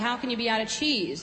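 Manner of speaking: plain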